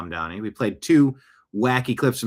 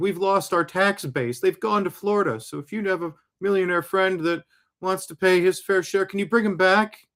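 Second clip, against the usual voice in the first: mock weepy, tearful, high crying voice; 9 semitones higher than usual. Imitating Kathy Hochul asking people to bring millionaires back: imitating Kathy Hochul crying. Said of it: "And then she's crying. She's like".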